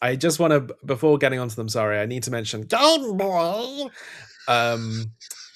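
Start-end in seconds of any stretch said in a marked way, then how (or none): 1.7-5.1 growled-out monster voice. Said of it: "'Cause that's what you sounded like".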